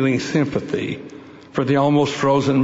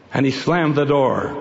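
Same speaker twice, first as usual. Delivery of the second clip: ordinary delivery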